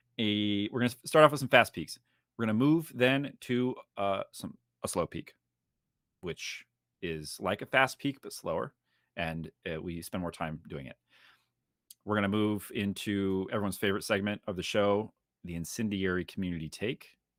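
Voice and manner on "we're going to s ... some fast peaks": fast, loud, rattled-off delivery. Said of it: "That's why I'm talking fast".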